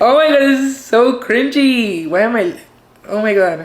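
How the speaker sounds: tearful crying speech. Coming out on camera, embarrassed, crying while talking. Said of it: "crying in front of the camera".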